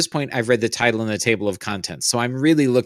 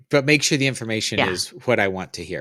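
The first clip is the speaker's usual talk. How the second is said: usual speaking voice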